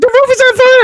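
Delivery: high panicked voice. Showing his higher voice for a panicked line, high panicked voice. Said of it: "It'd be my higher voice. You see, panicking".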